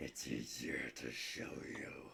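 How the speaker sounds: put-on very low, deep, resonant, age-old ancient voice. Voicing the voice from the orb, speaking to a player: deep ancient voice. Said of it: "some deep, almost, um, ancient voice".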